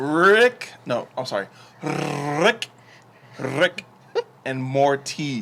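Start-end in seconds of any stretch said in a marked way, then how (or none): 1.8-5.4 mock careful, proper theatrical enunciation, higher. Repeating a show title after being teased, joking proper thespian diction. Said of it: "I must have proper diction".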